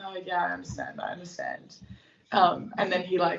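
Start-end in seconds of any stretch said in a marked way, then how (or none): 0.0-1.8 put-on hushed, crestfallen, very quiet, sad voice. Retelling own reply on a phone call with the coach: imitating own sad voice. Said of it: "really sad".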